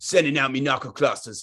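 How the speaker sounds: put-on Australian accent. While playing with the squad, speaking in a Fuse accent. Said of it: "you might want to stick with the Fuse accent".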